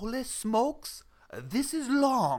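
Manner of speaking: accent that sounds Japanese. Reacting to something being long, in a Japanese-sounding accent. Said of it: "That sounded Japanese?".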